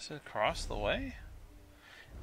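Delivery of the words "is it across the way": rising pitch on the word way. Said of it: "It is across the way".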